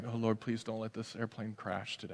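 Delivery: nervous muttering under breath. A nervous flyer on a plane, praying under their breath. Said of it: "under your breath".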